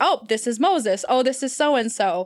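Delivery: plain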